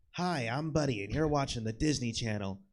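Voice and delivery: TV channel station ID bumper announcer delivery. Showing another speaker an old Disney Channel intro: Buddy impression. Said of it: "that was a good impression".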